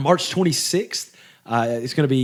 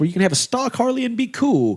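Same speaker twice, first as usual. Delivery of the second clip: put-on swooping radio ad announcer voice; 9 semitones higher than usual. Performing an ad for a bike shop, radio announcer voice. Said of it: "I did my Mister Radio voice".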